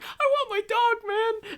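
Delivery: put-on very high, very slow, loud, drawn-out childish tantrum. Describing a childish mob boss character, imitating a mob boss throwing a fit. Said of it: "throw fits".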